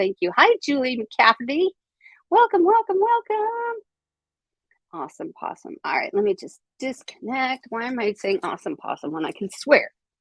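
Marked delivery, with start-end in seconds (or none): 0.4-3.8 goofy, silly, cartoonish puppet voice. Welcoming Julie McCafferty, saying her name in a Muppet voice. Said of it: "Did I say your name like a Muppet?".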